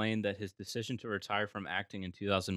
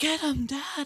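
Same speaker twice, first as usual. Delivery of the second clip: yelled in a high whisper; 4 dB louder than usual. Imitating a line from Attack of the Clones: Boba Fett yell whisper. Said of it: "it's like a whisper yell".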